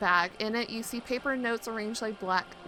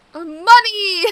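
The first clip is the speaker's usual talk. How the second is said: full-volume yelling, much louder and higher; 8 semitones higher, 10 dB louder than usual. Asking for money after being told to yell it, yelling at the top of lungs. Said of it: "Yell it from the top of your lungs".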